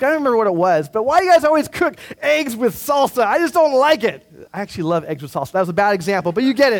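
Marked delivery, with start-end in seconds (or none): 0.9-4.2 mock mild half shout, pitched high. Five weeks in, complaining to the cooks of the day: retelling their own shouting. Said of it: "kind of shouting at them".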